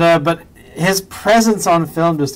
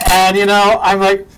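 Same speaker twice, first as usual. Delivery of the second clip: ordinary talk, nothing marked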